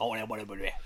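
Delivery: put-on spoken in a Cajun accent. Describing Wilford Brimley's role in a movie: Wilford Brimley Cajun accent. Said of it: "he's got, like, a Cajun accent. He's like".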